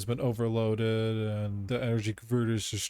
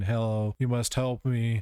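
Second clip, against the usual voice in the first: normal talking voice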